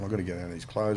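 ordinary talk

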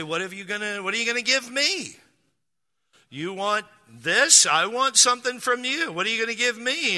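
playful, teasing tone in a joking grandfatherly manner. Retelling what you say to a child, teasing them in a jokingly uncle or grandfather way. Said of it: "in a just kind of a jokingly uncle or grandfather way".

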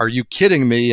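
loud, resonant coach-like voice. Retelling how John Thompson answered a request for quick questions in the hallway, big booming voice. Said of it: "in this big booming voice".

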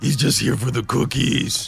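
throat-straining monster voice. Reacting to Cookie Monster's tweet, answering in a Cookie Monster voice. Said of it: "that makes my throat hurt just hearing you do that".

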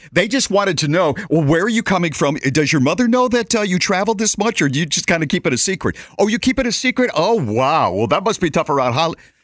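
loud, nonstop, chatty gabbing. On a plane, the speaker mimics two chatty passengers seated in front: imitating loud chatty passengers. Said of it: "they talked like this".

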